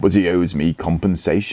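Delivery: ordinary delivery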